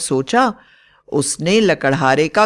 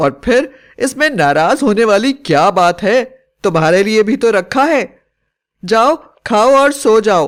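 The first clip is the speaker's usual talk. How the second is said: harsh, ferocious, snapping witch voice; 4 semitones higher, 4 dB louder than usual. Narrating a story, the witch in the wife's body speaks to the woodcutter: fierce witch voice. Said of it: "चुड़ैल ने इस मौके का फायदा उठाया और उसकी पत्नी के मरते ही उसके शरीर में चली गई। / पत्नी के शरीर में रहने वाली चुड़ैल को अब गुस्सा आने लगा और वह खूंखार आवाज में बोली, / पत्नी के शरीर में रहने वाली चुड़".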